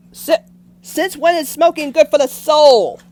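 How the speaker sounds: loud, high yell. Reacting to a claim that what's good for the soul isn't good for the body, yelling. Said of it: "I'm sorry, I didn't mean to yell".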